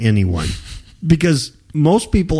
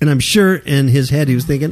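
usual speaking voice

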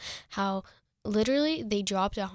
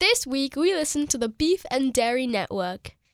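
high, put-on, fake British accent; 5 semitones higher, 4 dB louder than usual. Podcast host naming this week's reviewed podcast, in a fake British accent. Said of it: "we thought we would surprise you with British accents".

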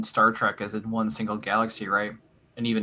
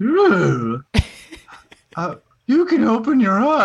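put-on kooky doddering old man voice, much higher, louder; 12 semitones higher, 8 dB louder than usual. Retelling how he tells her she can open her eyes, kooky doddering old fool voice. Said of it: "kooky old doddering fool voice".

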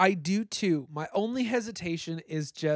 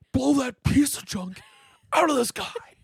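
loud, high-pitched, belted villain voice; 8 semitones higher, 6 dB louder than usual. Talking about a scene they find funny, quoting it in the Kylo Ren voice. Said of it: "It's the Kylo Ren voice".

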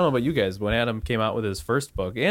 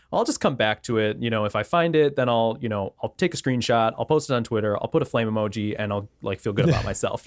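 usual speaking voice

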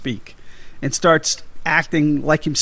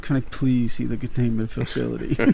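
put-on voice through teeth, lower and quieter; 3 semitones lower, 4 dB quieter than usual. Speaker quoting a scene to the other speaker, imitating Venkman through teeth. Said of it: "Just like through his teeth".

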